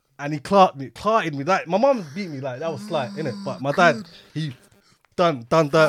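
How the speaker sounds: ordinary talk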